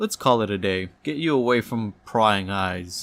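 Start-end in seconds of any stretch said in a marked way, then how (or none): none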